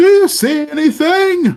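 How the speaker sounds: shrill, very high, loud distant yell. Speaker describes sound from the other side: retelling a guy yelling. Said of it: "of a guy yelling".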